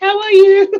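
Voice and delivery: cute little mock British accent. Joking that a new arrival would greet everyone: cute little British accent. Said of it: "a cute little British accent".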